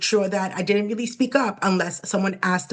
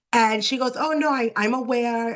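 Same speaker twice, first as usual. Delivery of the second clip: usual speaking voice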